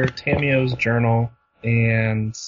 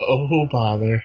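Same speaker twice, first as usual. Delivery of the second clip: put-on gloomy donkey voice. Answering a joke about a depressed horse: Eeyore voice. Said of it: "'Cause he's like Eeyore".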